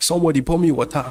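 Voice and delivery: put-on Nigerian English accent. Quoting what a friend says after a good move: Nigerian accent. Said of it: "in Nigerian accent".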